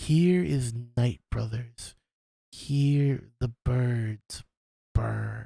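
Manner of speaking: barely audible, very slow, drawn-out words. Narrating a scene and voicing what the listener hears: a faint voice. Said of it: "you hear a faint voice".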